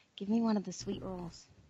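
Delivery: hushed stage whisper. Half-whispering to another character in his head: half-whispering. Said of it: "I whisper to Anthony in his head".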